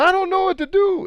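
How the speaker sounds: mock scream, pitched very high. Retelling a fight scene with a giant monster, imitating Atreus screaming back. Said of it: "Atreus screams back".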